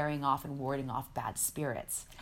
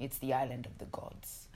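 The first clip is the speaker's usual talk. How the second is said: put-on Italian accent on English; 5 dB quieter than usual. Retelling a talk about Bali, the speaker quotes a woman in an Italian accent. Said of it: "with her Italian accent".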